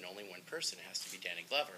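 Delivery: ordinary delivery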